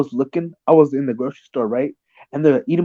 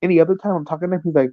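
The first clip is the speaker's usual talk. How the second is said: ordinary talk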